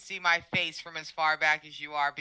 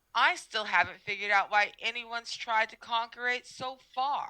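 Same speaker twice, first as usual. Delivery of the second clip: fast, high-strung, anxious, ridiculously condescending tone; 6 semitones higher than usual. Voicing an Andalite character answering a question about conquering earth: fast, anxious, condescending voice. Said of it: "my tone of voice ... very fast. It's absolutely high strung. It's super anxious, but is also ridiculously condescending".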